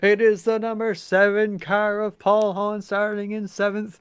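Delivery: put-on ringside wrestling announcer voice. Announcing the starting lineup, in a wrestling announcer voice. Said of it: "I got my announcer voice going on again".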